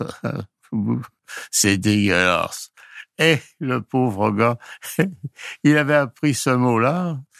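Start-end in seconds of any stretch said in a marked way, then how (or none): 1.5-2.7 put-on slow, drawn-out Pakistani accent. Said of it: "je le dis avec l'accent, moi".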